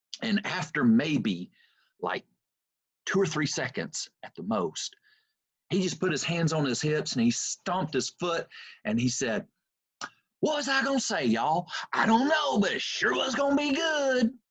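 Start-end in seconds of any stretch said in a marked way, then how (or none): 10.4-14.3 high-pitched, heavy East Texas twang. Retelling a speaker forgetting his words mid-speech: imitating Joel Osteen's East Texas twang. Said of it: "he talks like that ... with that twang".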